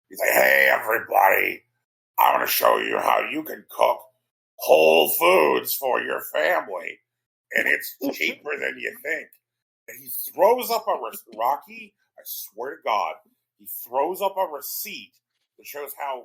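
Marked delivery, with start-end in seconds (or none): 0.4-9.3 loud, creaky, swooping, sing-song host voice. Retelling a cooking show clip, imitating Robert F. Kennedy voice. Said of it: "he's got that voice from".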